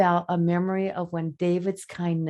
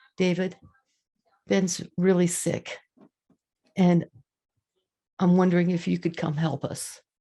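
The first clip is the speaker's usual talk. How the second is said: voice quavering and trembling on every word. Retelling a phone call asking someone for help, the speaker talks in a quivering voice. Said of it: "in this quivering voice that I have right now".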